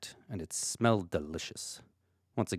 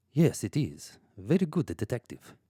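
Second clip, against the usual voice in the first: put-on Russian accent; 3 semitones higher than usual. Voicing a maid answering a detective's questions: russian accent.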